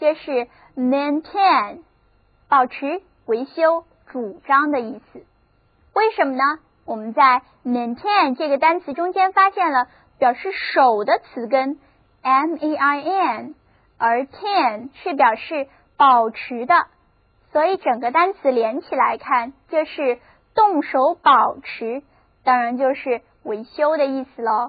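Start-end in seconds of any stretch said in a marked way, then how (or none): 0.8-1.8 maintain said slowly, second syllable tain stressed. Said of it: "重音放在第二个音节上，read after me".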